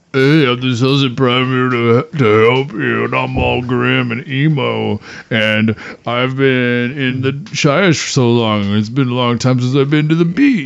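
teasing voice, slow, drawn out, light and high. Imitating the Celestant Prime mocking the others: mocking Celestant Prime voice. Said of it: "He's like".

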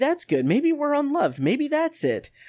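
put-on very high, bright, sing-song cheerful tone. Interpreting what she is saying, voicing her line: mock-cheerful. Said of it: "And not quite as cheerful as that".

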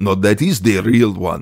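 put-on Russian accent. Retelling the doctor's answer about the broken model: imitating a russian accent. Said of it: "and he's Russian".

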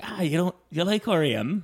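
put-on Irish accent with very high pitch. Retelling a cousin's question on a first visit, in cousin Ashley's Irish accent. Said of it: "we don't do, do accents".

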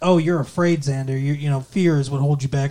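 ordinary delivery

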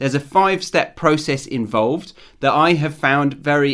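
ordinary talk, nothing marked

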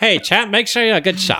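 put-on very high, old-fashioned, old-timey way of talking. Joking about how people talked long ago: old-timey voice. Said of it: "talk in old-timey voice".

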